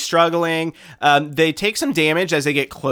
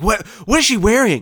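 mock baffled, startled, surprised, pitched up; 7 semitones higher than usual. Recalling first seeing a trailer, retelling own surprised reaction. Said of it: "I was like".

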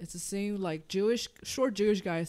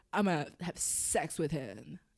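put-on California Valley Girl accent; 4 semitones lower, 3 dB quieter than usual. Describing a scene, the speaker voices the woman in a valley girl voice. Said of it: "So I'm trying to do Valley Girl".

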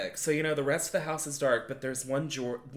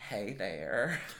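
put-on cartoon voice of an older man; 6 semitones lower, 6 dB quieter than usual. Retelling hearing a voice at the door: imitating the Family Guy character's voice.

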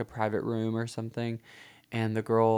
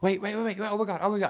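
mock-panicked exclamations, put-on, much higher pitched; 10 semitones higher than usual. Retelling a ride where the driver nearly hits pedestrians, imitating Howard's panic. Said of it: "legitimate panic in Howard's voice".

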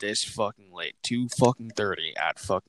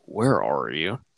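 loaded, pointed, passive-aggressive tone; 5 semitones lower, 3 dB louder than usual. Retelling how she called asking where he was, mimicking a passive-aggressive voice. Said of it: "in the most fucking, like passive aggressive fucking voice".

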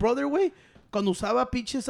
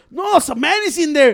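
loud yelling, pitched much higher; 3 semitones higher, 7 dB louder than usual. Telling a story at the mic, yelling. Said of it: "Why you yelling at the mic?".

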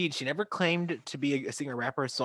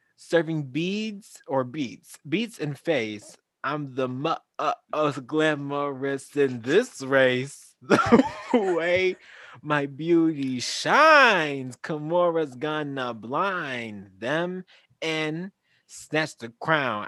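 put-on flamboyant voice, higher and louder; 4 semitones higher, 7 dB louder than usual. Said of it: "I'm gonna read it in her voice".

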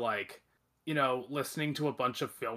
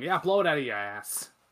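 put-on loud Quebec French accent; 3 semitones higher, 6 dB louder than usual. Imagining a director's reply to critics: Denis Villeneuve impression, Quebecois accent. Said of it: "I can see Denis Villeneuve and Quebecois going".

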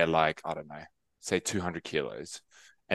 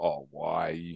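disapproving, judgmental tone, quieter; 5 dB quieter than usual. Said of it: "it's the way you say it as well".

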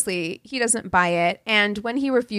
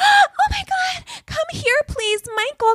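voice pitched way up, about two octaves higher. Imitating a woman whose voice rises when she sees him: very high-pitched voice. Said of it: "her voice goes up like two octaves".

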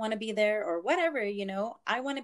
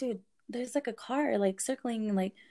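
ordinary talk, nothing marked

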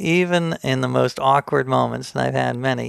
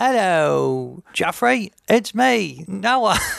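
very slow, high, bad put-on Australian accent; 6 semitones higher than usual. Retelling how you greeted a famous Australian actor who backed away, use a bad Australian accent. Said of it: "I had this bad Australian accent".

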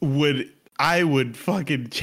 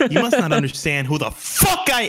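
mock angry yelling, higher pitch; 4 semitones higher, 3 dB louder than usual. Acting a mom scolding her son, playing a mom yelling. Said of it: "I said I wouldn't yell at you".

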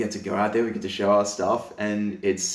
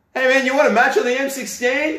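very high, loud yell; 8 dB louder than usual. Retelling how an army mate called out from across the room: imitating a yell. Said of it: "yells out from across the room".

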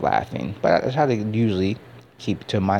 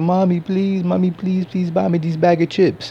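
put-on acted, very high, tearful crying little boy voice; 10 semitones higher, 4 dB louder than usual. Retelling how a little boy begged his mom for chips: imitating a crying, begging child. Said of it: "this little boy crying with his mom".

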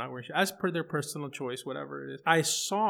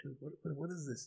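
very quiet, hushed half-whisper; 11 dB quieter than usual. Retelling going inside and asking Dad something, half-whispering. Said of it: "I whisper like".

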